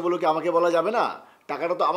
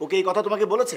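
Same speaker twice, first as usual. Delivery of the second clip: plain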